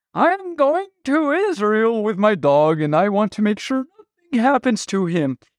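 put-on high elderly woman's voice. Telling a joke, speaker voices an old lady talking to a ticket agent in an old lady voice. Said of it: "I don't know why she talks like this".

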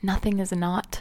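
plain

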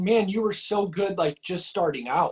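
plain

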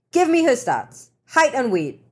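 clipped, high, snappy tone. He turns on the photographer after the narrator questions him, snapping. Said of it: "he snapped at the photographer".

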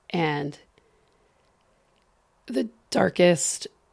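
voice cracking and breaking. Sharing a part of their story they rarely talk about, voice cracking. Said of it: "my voice just cracked".

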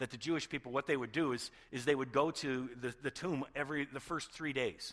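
ordinary delivery

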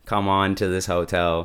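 ordinary talk, nothing marked

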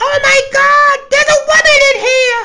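put-on sissy scream. Retelling a guy screaming that a woman is in the room: imitating a little sissy scream. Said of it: "then a little Nelly sissy scream".

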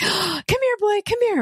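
very high, eager, excited coaxing call. Speaker explains how people call a dog, energetic dog-calling voice. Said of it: "you change your voice".

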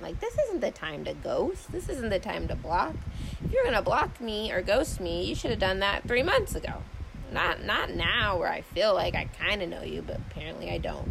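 usual speaking voice

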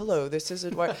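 stiff put-on radio announcer voice. Showing how stiff people sound once the microphone is on, NPR voice. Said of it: "NPR voice".

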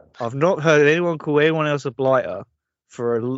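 ordinary talk

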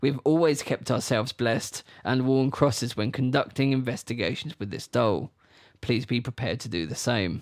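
ordinary delivery

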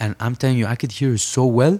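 ordinary talk

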